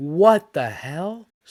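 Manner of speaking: slow, drawn-out, incredulous exclaiming tone.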